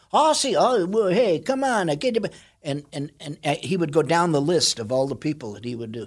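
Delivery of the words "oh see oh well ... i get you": put-on, pitched-up Italian accent. Retelling an old bit about casting a japanese role: italian accent. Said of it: "But he has an Italian accent".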